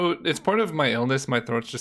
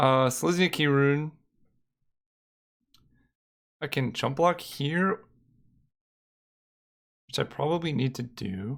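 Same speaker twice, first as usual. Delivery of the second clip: voice almost gone, giving out. Commentating a card game while losing voice, voice almost gone. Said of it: "my voice is just gone".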